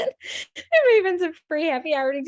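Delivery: talking through laughter. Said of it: "Sorry, I'm laughing at what Emily said".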